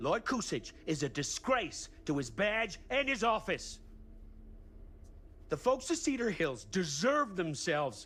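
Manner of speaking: angry, rising voice. A game character yelling, angry. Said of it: "he's definitely mad".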